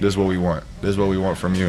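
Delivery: ordinary talk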